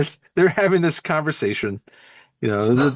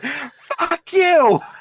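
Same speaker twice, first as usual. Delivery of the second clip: put-on piercing, very high shriek; 13 semitones higher, 3 dB louder than usual. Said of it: "she started screaming some more".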